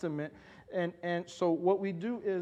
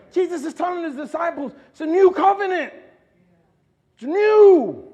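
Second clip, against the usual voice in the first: impassioned yelling, very loud and high; 11 semitones higher, 12 dB louder than usual. The speaker gets animated while teaching about the wine; yelling. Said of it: "I'm sorry, I'm yelling".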